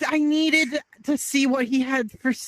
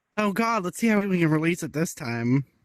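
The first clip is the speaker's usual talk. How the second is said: sarcastic muttered remark; 8 semitones lower than usual. Speaking in character to oneself about a dragon fountain: sarcastic. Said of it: "I sarcastically say to myself".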